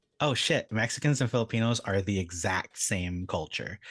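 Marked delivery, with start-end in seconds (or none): none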